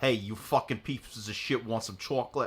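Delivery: strong New York accent. Comparing how each person says chocolate, showing a new york accent. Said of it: "New York accent comes out when I say".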